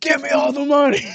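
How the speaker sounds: shrill, very high and very loud bellow. Retelling what a man yelled from across the building, retelling a loud shout. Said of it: "hear from across the freaking uh, like whole building".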